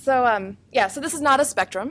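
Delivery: very loud, near shouting. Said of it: "I feel like I'm really loud".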